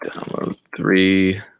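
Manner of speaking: slow, soft, dictating delivery. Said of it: "I'm just demonstrating something".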